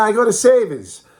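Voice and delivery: strong New England, savers without r. Speaker showing how he'd say the store name, thick New England accent. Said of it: "drop the New England accent".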